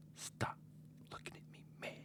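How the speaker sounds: hushed, whispered dad voice. Repeating the podcast's closing tag line, imitating dad. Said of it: "that's me doing my dad as a funny".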